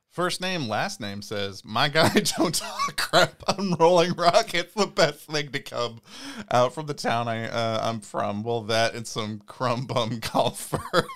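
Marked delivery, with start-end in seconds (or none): 1.7-11.1 loud, laughing through the words, cracking up. Reading a comment aloud to another speaker, laughing while talking. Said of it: "Say that again without laughing".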